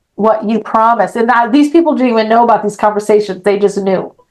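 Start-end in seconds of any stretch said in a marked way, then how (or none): none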